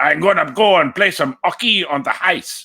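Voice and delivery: put-on French Canadian accent. Mocking how French Canadians talk about hockey: imitating a French Canadian accent. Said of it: "they take away the H where it's needed".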